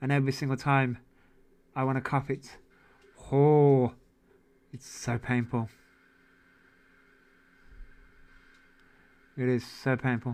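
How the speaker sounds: a bit short of breath. Talking to Jace after wanting to cough, a bit out of breath. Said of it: "I sound a bit out of breath".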